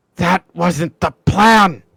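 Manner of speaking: hushed low whisper. A figure in the vent speaks to the player in the cell: low whisper. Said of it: "hear like a low whisper kind of goes".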